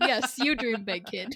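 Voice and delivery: plain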